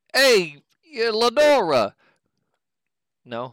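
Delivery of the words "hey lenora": put-on Boston accent, very loud and high. Cueing the accent mid-conversation, call out a greeting in a boston accent. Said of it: "This is where I cue the Boston accent".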